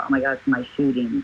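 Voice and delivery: ordinary talk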